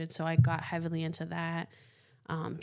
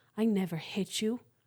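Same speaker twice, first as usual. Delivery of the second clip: put-on serious, earnest tone with higher pitch; 4 semitones higher than usual. Retelling how a father denied hitting his son: imitating someone getting serious. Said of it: "My dad got all serious".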